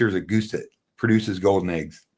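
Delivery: plain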